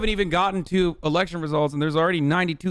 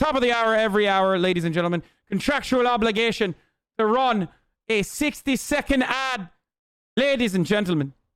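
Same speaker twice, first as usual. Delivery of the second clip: fake Irish accent, pitched up, ad-read style; 5 semitones higher than usual. Host announcing a sixty second ad break, put-on Irish accent. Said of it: "do the Irish accent, but I do it anyway".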